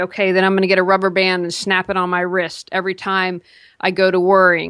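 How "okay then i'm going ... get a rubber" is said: ordinary delivery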